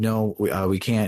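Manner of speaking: plain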